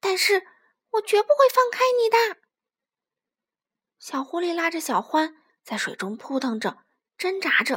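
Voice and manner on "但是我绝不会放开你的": shrill, very high, loud shout. In a story, the little fox grabs his friend in the stream: shouting loudly. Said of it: "大声喊着".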